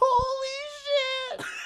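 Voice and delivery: very high exclamation with "Holy" stretched long. Showing how a friend's impression of the other speaker sounds: imitating a friend's impression. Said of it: "It sounds like this".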